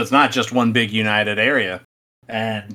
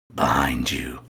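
very low, hushed, creepy demonic voice; 10 semitones lower, 5 dB quieter than usual. Retelling a solo game session, the speaker imitates the ghost's answer: creepy demonic voice. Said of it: "in a creepy, like, demonic voice goes".

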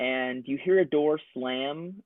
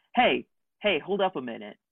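calling out to someone moving away; 2 semitones higher than usual. Narrating a game scene, the speaker voices the mayor, yelling after someone. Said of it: "the mayor yelling after you".

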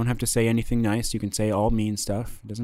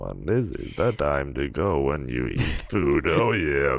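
put-on robotic computer voice, lower pitched; 7 semitones lower than usual. Doing the Stephen Hawking robot voice that another speaker asked for: Stephen Hawking robot voice. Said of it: "That's the voice".

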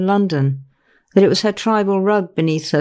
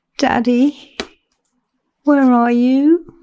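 slow, high, drawn-out cry; 5 semitones higher than usual. After the phone line goes dead, Vicky calls for her father, crying out softly. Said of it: "She cried it out softly".

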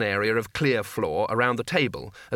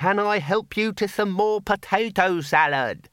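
loud, pitched-up, over-careful, deliberate, spelled-out delivery; 9 semitones higher than usual. The bursar leans down to speak to a guest, in a loud, deliberate voice. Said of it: "in the loud, deliberate voice used for talking to imbeciles and old people".

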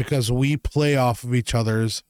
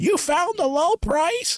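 mock very high, stretched-out, drawn-out yell. Retelling calling out a question across a store: imitating a yell. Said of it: "I'll also hear one of us yell".

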